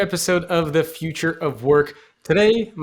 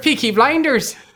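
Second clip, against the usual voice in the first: clumsy, bad put-on Irish brogue, pitched up; 6 semitones higher than usual. Asked on a podcast for a rendition of an Irish accent, giving a bad Irish accent. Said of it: "can you give me your rendition of an Irish accent".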